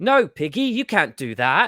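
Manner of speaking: put-on British-accented storyteller voice. Retelling a dream, voicing its narrator speaking to a pig, British narrator voice. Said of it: "a narrator with a British voice that goes".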